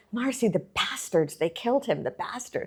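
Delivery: high, mild, mock half-shouted yell. Retelling a friend's phone call about a killing: imitating Alexander yelling. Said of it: "he's yelling".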